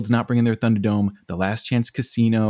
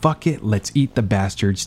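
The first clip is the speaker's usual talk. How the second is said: normal talking voice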